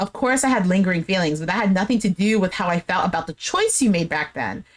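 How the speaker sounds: ordinary delivery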